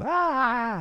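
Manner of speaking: very high, mock dog scream.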